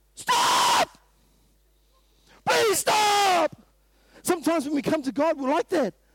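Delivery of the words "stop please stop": high, loud, pleading shout. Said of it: "he's not saying".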